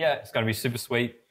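normal talking voice

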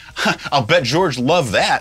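sarcastic, sarcasm-laced tone. Retelling his own reply to a story about a guitar crew job, retelling a sarcastic reply.

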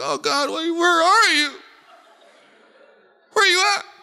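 high, tearful, self-pitying crying voice. Speaking to a listener, mimicking their pity-party voice, high and crying. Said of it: "your voice gets all high, and you start crying".

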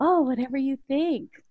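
trembling, nervous voice. Retelling saying a phrase from a book for the first time: retelling a shaky nervous voice. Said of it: "My voice was shaking".

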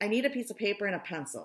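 pressing, hurried, fast, urgent. Having just seen the answer all at once, he speaks up to the others, urgent. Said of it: "he said urgently".

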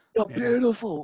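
mock loud calling voice. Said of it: "he's really loud saying it".

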